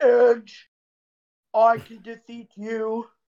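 slow, flat, level, robotic, machine-like monotone. Mocking how a wrestler talks to Edge, robotic Orton impression. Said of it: "he sounds so robotic".

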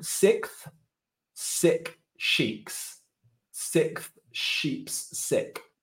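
deliberate, slow, careful, word-by-word reading. Trying what is called the toughest tongue twister, the speaker reads it slowly. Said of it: "I'm reading it slowly".

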